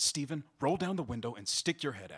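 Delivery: ordinary delivery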